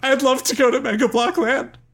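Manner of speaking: very high, tearful weeping and crying. Voicing a character who accepts an invitation home: crying. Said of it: "And she starts crying, tears welling up".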